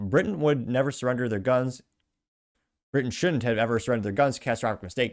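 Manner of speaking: normal talking voice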